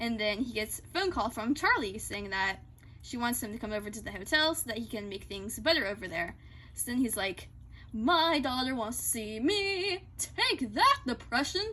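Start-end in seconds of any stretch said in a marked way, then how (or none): 7.9-11.6 slow, drawn-out character voice. Retelling a scene where Lucifer gets a phone call: Lucifer impression. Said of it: "My best impersonation I can do".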